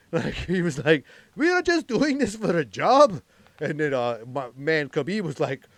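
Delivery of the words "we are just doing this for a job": put-on high, sing-song Irish lilt, pleading. Retelling what a fighter said to Khabib mid-fight, in his Irish accent. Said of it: "In his Irish accent".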